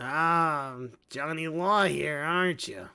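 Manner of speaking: giant lizard-man drawl, very slow. A giant lizard-man chief greets a lawman, in a giant lizard-man chief voice. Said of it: "You have befriended a giant lizard man named [name]. / And he reaches out his hand, his gigantic hand. / And he reaches out his hand, / [name] the Lizard Chief".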